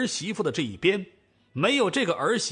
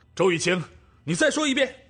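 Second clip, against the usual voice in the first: loud roaring shout. A man turns around and answers a woman who just wailed at him, roaring back. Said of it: "赵正大回身吼道".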